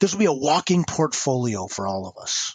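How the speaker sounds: ordinary delivery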